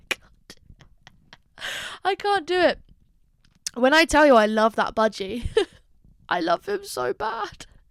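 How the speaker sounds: voice choked with held-back tears. Talking about a beloved budgie while feeling the tears: holding back tears. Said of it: "now I can feel the tears".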